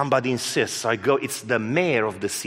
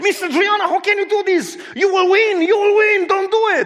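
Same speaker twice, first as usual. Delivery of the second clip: very high, loud, fired-up, excited yelling; 6 dB louder than usual. Retelling what the judge said in court: imitating someone yelling excitedly. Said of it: "she was yelling at me".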